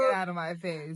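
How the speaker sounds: normal talking voice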